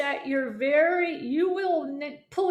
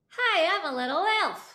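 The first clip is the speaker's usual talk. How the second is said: voice placed far forward, front of mouth; 3 semitones higher than usual. Showing a vocal exercise to students: voice brought really forward. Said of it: "can you bring your voice really forward and say".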